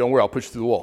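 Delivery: put-on straight-faced delivery. Speaker imitating a man in a cramped space answering him, retelling a deadpan line. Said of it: "Dead face".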